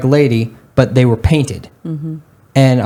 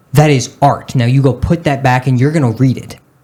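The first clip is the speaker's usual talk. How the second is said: put-on disgusted tone. Retelling what a teacher said about a book: imitating a disgusted teacher. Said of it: "with the most disgusted look on her face".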